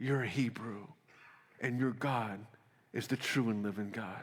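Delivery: put-on half-whispering motherly voice. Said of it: "Can you hear Moses' mom?".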